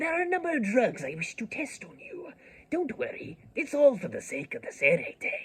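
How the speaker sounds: very high-pitched, put-on anime dub character voice. Showing the voice they would use for Kurotsuchi: Kurotsuchi dub voice. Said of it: "I do a really good Kuretsuchi voice".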